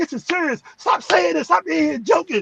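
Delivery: emotional scolding. Retelling how she told him to stop joking: imitating someone getting emotional. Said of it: "She in there getting emotional".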